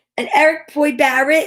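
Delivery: put-on New Jersey girl accent. Reading an illustrator's name aloud: imitating a jersey girl accent. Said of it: "If I read it like a Jersey girl".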